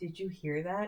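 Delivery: very quiet, hushed half-whisper. Retelling what the gyno asked during an appointment: imitating a half-whisper. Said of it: "she whispers to me".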